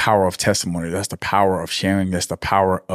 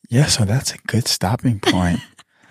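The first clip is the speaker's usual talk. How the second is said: mock-soft, softened put-on voice; 2 semitones higher than usual. Teasing the other speaker about how they sound when wrapping up, imitating someone's soft voice. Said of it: "you get like very like soft".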